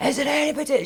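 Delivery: very high, shrill, calling-out yell. Retelling how a man at a seance suddenly called out: imitating someone shouting. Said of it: "Shouting and shouting".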